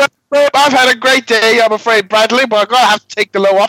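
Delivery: fake northern English accent, loud, pitched way up. Doing an impression of someone speaking to Bradley, in a put-on northern English accent. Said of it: "Why is he northern?".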